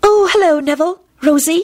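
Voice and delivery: very high, dreamy voice floating out. At Hogwarts, Luna greets Neville and Rosie as they arrive, Luna's dreamy voice. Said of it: "she said in her dreamy voice".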